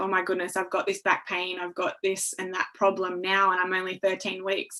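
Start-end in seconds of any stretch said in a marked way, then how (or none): none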